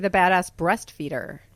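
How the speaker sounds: ordinary talk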